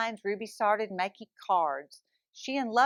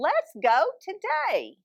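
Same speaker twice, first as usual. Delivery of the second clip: high, swooping, squawky lovebird voice; 6 semitones higher, 3 dB louder than usual. A narrator reads a character's line in a story, squawky voice. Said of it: "in a squawky voice".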